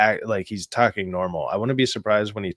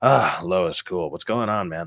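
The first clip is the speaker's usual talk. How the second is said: put-on laid-back casual voice, lower; 4 semitones lower than usual. Imitating how the character talks to Lois: imitating chill Clark Kent voice. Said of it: "he's just chill".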